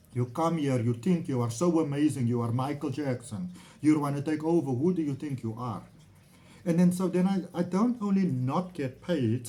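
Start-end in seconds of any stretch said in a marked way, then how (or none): 0.2-5.8 haughty put-on Turkish accent in broken English. Retelling what the person who didn't pay them said, mock-arrogant broken Turkish accent. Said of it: "this broken Turkish accent, very arrogant".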